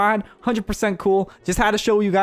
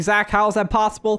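ordinary talk, nothing marked

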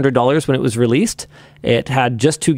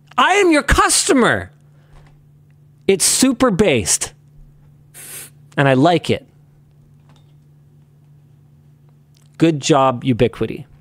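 angry-sounding tone, higher; 3 semitones higher than usual. Praising Ubiquiti's hardware policy over Apple's, sounding angry. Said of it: "I sound, like, angry, but I'm happy".

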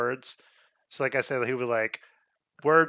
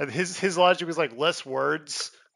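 usual speaking voice

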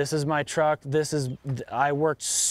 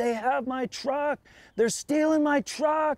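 mock screaming in a shrill, very high voice; 11 semitones higher than usual. The truck owner recounts chasing the thief in his pickup, retelling screaming. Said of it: "I'm just screaming".

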